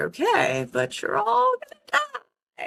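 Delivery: put-on very high, rasping, creaky old witch voice. Recalling how you answered people who argued with you, in your best witch voice. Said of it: "like my best witch voice".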